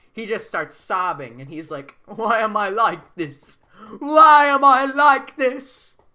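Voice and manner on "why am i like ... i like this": put-on sobbing, much higher and louder. In a made-up story, a seven-year-old breaks down crying, mock sobbing. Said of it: "He just starts sobbing".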